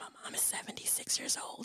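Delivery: very quiet, hushed whisper. Telling the Clubhouse room their mom's age, in a whisper. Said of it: "I got to whisper".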